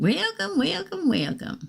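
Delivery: very high little-lady voice. Greeting Tina at the start; Poltergeist little lady voice. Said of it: "I sound like that little lady that from Poltergeist when I say it like that".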